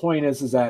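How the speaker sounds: ordinary delivery, nothing marked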